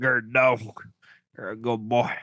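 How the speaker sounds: put-on rural twangy accent. Joking about how a redneck would say a name: redneck voice. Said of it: "Sounds like how a redneck would say it".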